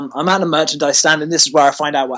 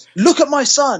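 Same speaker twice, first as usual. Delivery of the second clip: put-on angry screaming, very high and screeching; 10 semitones higher, 3 dB louder than usual. Speaker retells a woman at ringside pointing to her son: imitating a woman screaming. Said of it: "she's like screaming and shouting".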